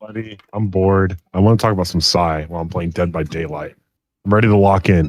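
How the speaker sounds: casual, deep, dropped, heavier voice. Greeting a buddy at the start of a chat, in a deeper than normal voice. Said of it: "You sound deeper than normal".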